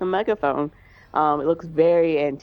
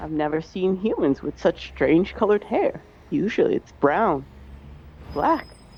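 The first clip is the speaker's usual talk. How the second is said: awed, fascinated, wonder-struck musing. Meeting two unusual human visitors, the character speaks to them, marveling. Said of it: "he's kind of marveling at you".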